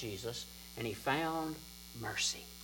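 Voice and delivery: ordinary talk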